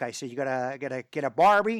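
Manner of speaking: very loud attempted Texan accent. Talking about getting barbecue when visiting texas, in an attempted texan accent. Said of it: "That was my attempt at a Texan accent there".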